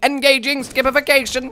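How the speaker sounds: very high, flat, monotone robot voice. While playing a game, trying out a freshly coined word in a robot impression. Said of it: "that was a pretty good robot impression".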